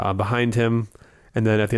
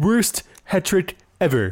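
snooty, disdainful nerd voice, high and swooping; 8 semitones higher than usual. Showing a co-host how the line should sound: Comic Book Guy voice. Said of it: "much better".

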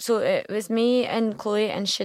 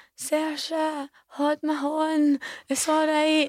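high, drawn-out, comforting shout; 7 semitones higher than usual. Retelling a friend calling out after surgery: imitating someone shouting. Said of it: "she was shouting".

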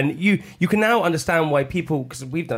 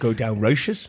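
put-on Brummy accent, spoken much lower; 3 semitones lower than usual. Asked how Lenny sounds, attempting his voice: Lenny's Brummy accent. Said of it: "it's my Brummy accent".

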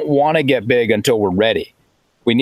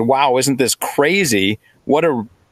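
put-on dripping sarcasm, who-cares, slow newscaster tone. Retelling how newscasters covered the sport: imitating sarcastic newscasters. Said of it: "you could potentially hear the sarcasm".

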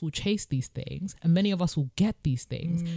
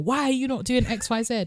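high, mild heckling voice; 6 semitones higher than usual. Imitating football fans yelling at a former player: imitating fans screaming at a player. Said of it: "they'll be screaming at ex football player".

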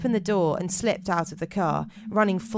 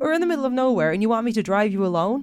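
generic put-on American accent; 4 semitones higher, 4 dB louder than usual. Retelling a story about a child, line in a generic american accent. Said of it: "I'm just doing a generic American accent".

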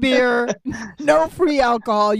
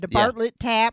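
put-on Midwestern accent. Repeating a guest's words to tease his accent: imitating a Midwestern accent. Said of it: "now I heard the Midwestern accent there".

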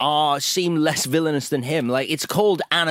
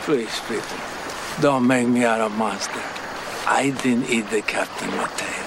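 put-on Paraguayan accent, pitched lower; 5 semitones lower than usual. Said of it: "closer to a Paraguayan accent than John Voight".

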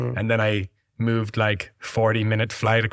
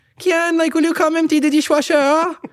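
put-on French accent, much higher pitched; 7 dB louder than usual. Imitating their French mum, who has lived in Ireland for years, in her accent. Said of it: "she's got like a cock French accent".

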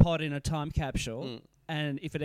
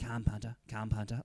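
put-on whisper, lower and quieter; 5 semitones lower, 6 dB quieter than usual. Retelling whispering with a brother as the players walked past: retelling a whisper. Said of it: "kind of whispering as the players walked past".

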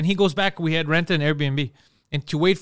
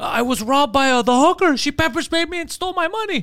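mock very high panicked scream, drawn out; 9 semitones higher than usual. Retelling what a man said when he called, retelling a scream. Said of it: "he's screaming".

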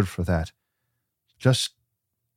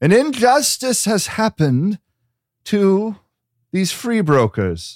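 high, raised, proclaiming call. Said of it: "he yells out".

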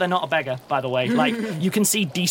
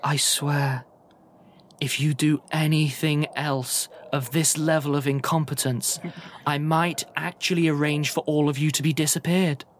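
put-on, incredibly cultured and refined woman's voice. A narrator voices someone behind a door, in an incredibly cultured woman's voice. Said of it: "an incredibly cultured voice on the other side of it going, woman's voice".

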